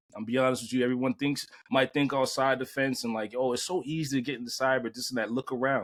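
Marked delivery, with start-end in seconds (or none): none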